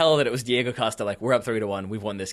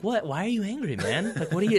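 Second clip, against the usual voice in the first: put-on, very calm, higher pitch; 9 semitones higher than usual. Acting out someone going calm after being screamed at: imitating going super calm. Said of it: "then you go super calm".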